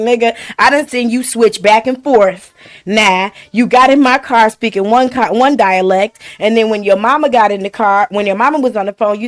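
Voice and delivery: plain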